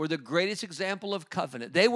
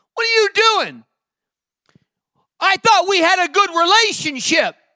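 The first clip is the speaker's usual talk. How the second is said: acted scolding tone; 13 semitones higher, 12 dB louder than usual. Retelling how the Lord answered a man ready to give up, mock scolding. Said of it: "Then the Lord scolded him".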